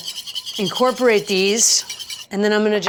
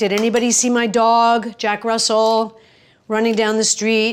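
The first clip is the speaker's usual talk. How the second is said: ordinary delivery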